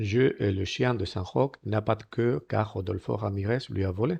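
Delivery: ordinary delivery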